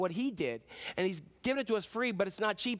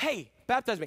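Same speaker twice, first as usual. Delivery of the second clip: put-on excited, eager cry; 3 semitones higher, 4 dB louder than usual. Preaching about a man eager to be baptized, acting out excited eagerness. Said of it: "That's how excited he was".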